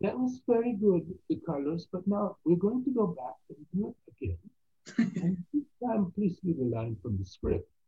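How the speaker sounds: clumsy fake Dutch accent. Act out the director coming up to you after the take, in a bad put-on accent. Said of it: "Pardon my bad accent".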